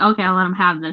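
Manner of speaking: ordinary talk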